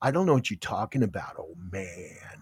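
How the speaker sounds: raspy, low, soft, just-out-of-bed voice. Teasing the other speaker about how they talk, raspy, low voice. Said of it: "You get your voice real raspy and low".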